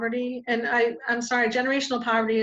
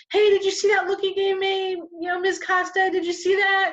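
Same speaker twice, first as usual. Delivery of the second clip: put-on high, worked-up child voice, freaking out; 9 semitones higher, 3 dB louder than usual. Speaker retelling a student who complains to the teacher, imitating a kid freaking out. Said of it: "he starts freaking out like".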